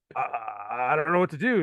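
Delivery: worst, cheesiest cartoon monster dub voice. Retelling what a voiceover performer said, imitating a bad canadian cartoon monster voice. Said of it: "sounds like every bad Canadian cartoon monster".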